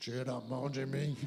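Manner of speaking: very low, heavy, thickened big-man voice. Retelling a man being put into a car who told the speaker off, imitating a thickened deep voice. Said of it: "A voz do homem engrossou".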